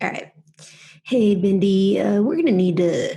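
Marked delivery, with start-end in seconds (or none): 1.0-3.2 douchey corporate-bro delivery full of filler words. Speaker asks to try it, addressing Bindi in a corporate douchey voice. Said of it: "my like corporate douchey voice".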